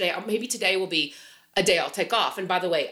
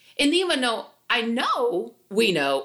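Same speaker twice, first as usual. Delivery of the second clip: breaking voice, cracking mid-phrase; 3 semitones higher than usual. Speaker talking to viewers, voice breaking mid-sentence: voice cracking. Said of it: "my voice just cracked".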